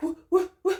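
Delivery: play-acted alarmed, bewildered, panicked, high voice. Acting out how a worker reacted to a crying customer coming in, in imitated panicked asking. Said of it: "and I'm sobbing".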